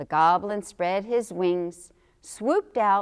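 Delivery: plain reading voice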